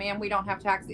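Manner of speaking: ordinary delivery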